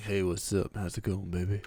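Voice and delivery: sultry, low, soft, deep seductive voice. Showing the voice you get when you are sick: sexy deep voice. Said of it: "you get kind of the like sexy deep voice a little bit".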